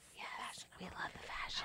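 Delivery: soft, unvoiced whisper.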